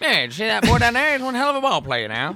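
put-on loud, old-fashioned, old-timey Northeastern accent. In a group conversation, demonstrating an old-timey Northeast accent. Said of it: "They talk like that in the Northeast. Back in the day".

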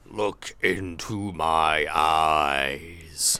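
very deep, gravelly villain intonation. Depicting a moment from an episode that could have been scary, in a gravelly voice. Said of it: "that's actually a really good sort of depiction of it".

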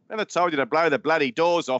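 put-on very high voice, accent sliding and wandering toward Australian. Doing an impression on request: Michael Caine impression. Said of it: "Come on, do a Michael Caine".

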